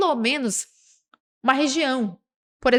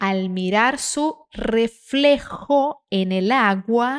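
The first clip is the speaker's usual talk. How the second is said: slow, careful reading aloud in Spanish. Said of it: "Treina essa palavra aqui".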